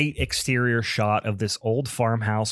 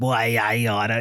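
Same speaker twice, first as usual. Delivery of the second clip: cartoonish old-timer voice, straight out of a cartoon. Retelling a movie scene with a cartoonish old couple: imitating a cartoonish old man. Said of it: "they're just like this cartoonish old couple".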